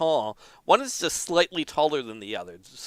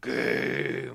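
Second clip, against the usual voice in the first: deep, low rumbling voice, quieter; 3 semitones lower, 4 dB quieter than usual. Narrator voicing a character in a story about a statue, deep earthly rumble. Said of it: "In a deep, earthly rumble".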